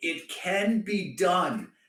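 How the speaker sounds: mock scream, acted out. Retelling standing up after finally beating an unbeatable player, acting out a scream. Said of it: "and I was like screaming".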